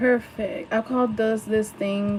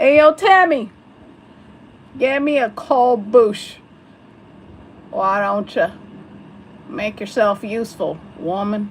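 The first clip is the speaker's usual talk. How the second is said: very loud, laid-on put-on hillbilly twang; 9 dB louder than usual. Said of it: "Really? Like that?".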